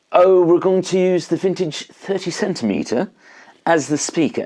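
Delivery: bad, annoying fake British accent. Guitarist recalling how players talked while recording, in an annoying crappy british accent. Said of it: "in like the most annoying and crappy British accent".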